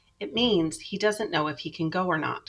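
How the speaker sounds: ordinary delivery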